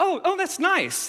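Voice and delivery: very high-pitched, hollow, insincere nice tone. Acting out people's reaction on hearing he's a pastor: high-pitched 'nice'. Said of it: "when you say nice in a high-pitched voice, you don't mean nice".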